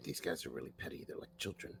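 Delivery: hushed, breathy stage whisper, meant to carry. A character whispers to Aurelia, loud enough to be overheard, stage whisper. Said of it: "I'm gonna whisper to Aurelia".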